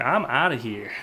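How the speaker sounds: plain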